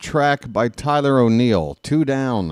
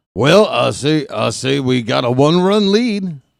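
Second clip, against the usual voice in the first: put-on cartoon rooster announcer voice; 4 dB louder than usual. Asked to do the cartoon rooster as an announcer, Foghorn Leghorn voice. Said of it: "can you do Foghorn Leghorn as an announcer?".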